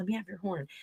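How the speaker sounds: hushed, very quiet half-whisper. Retelling how a sister asked her brother for his horn: imitating a half-whisper. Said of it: "she whispered to him".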